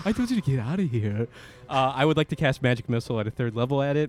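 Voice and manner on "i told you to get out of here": heavily seductive character voice. During a tabletop game, a player speaks as Sam in a sexy Sam voice. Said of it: "that's my sexy you Sam voice".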